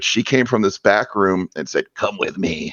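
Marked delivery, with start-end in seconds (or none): 2.0-2.7 rough, scratchy, low rasp of a woman's voice. Retelling how a woman from a back room called him over, imitating a scratchy, deep voice. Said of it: "she's this scratchy, deep voice woman".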